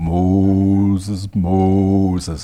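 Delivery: very deep voice, one word drawn out long. Retelling the burning bush story, speaker voices God calling Moses: Ten Commandments real low voice. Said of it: "you know that real low voice?".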